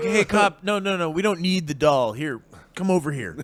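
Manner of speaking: innocent, naive, guileless, clueless helpful tone. Retelling how Kevin talked to a cop: imitating naive Kevin. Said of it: "Kevin's so naive that he's like".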